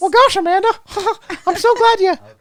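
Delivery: squeaky cartoon mouse voice. After agreeing it sounds like Mickey Mouse, the speaker addresses Amanda; Mickey Mouse voice. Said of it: "sound kind of like the Mickey Mouse".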